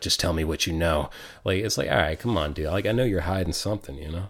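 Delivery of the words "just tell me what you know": deep, low put-on hero voice. Retelling how a man talked while trying to do the Batman voice. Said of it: "he's trying to do like the Batman voice".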